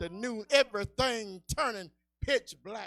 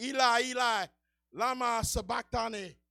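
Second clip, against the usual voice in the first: usual speaking voice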